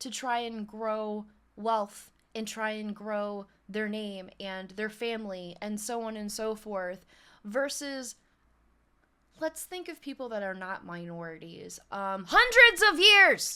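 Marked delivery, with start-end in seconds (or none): 12.3-13.6 high, very shrill, very loud scream. Complaining about lasting discrimination against minorities: screaming. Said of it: "I didn't mean to scream in your ear".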